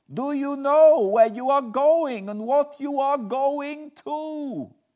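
shrill, blaring, frantic, very high, very loud, hysterical. On the eve of St. George's Day, an old woman pleads with the narrator: hysterical. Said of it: "I faced a cheery-looking elderly woman in the usual peasant dress, ... the old lady came up to my room and said in a very hysterical way, ... She was in such an excited state that she seemed to have lost her grip of what German she knew and mixed it all up with some other language which I did not kn".

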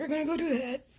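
put-on old man voice. Speaker announcing a trip to a 1950s-style soda fountain, sounding like an old man. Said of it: "I sound like old man Jenkins".

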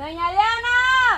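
slow, high, drawn-out calling voice.

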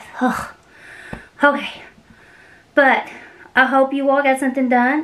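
breathless, out of breath, winded. Just back inside after taking the trash out, out of breath. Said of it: "now I'm out of breath".

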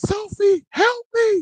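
shrill, very high, very loud, panicked, terrified scream. Narrating a scene, voicing Luna screaming for help, terrified. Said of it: "Luna then screams out".

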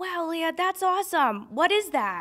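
very high-pitched, put-on Philadelphia accent. Retelling her dad's reaction to her news on the phone, in a Philly accent. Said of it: "I just tried to do the best Philly accent".

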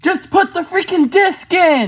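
shrill, very high, loud yelling. Fed up with the others checking the back of the case first, shouting. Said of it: "You don't have to yell at us".

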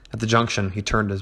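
plain reading voice

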